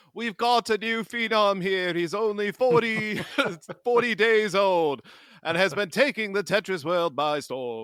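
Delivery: very loud, high-pitched, showy announcer voice. Hosts joking about a forty-day-old baby playing Tetris, in Robin Leach-style announcer voice. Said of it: "the game announcer we didn't know we needed".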